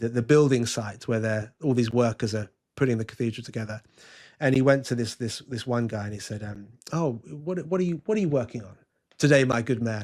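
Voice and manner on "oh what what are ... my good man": put-on old English accent. Retelling a legendary story of a man addressing a worker at the cathedral site, old English accent. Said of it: "in in his best old English accent".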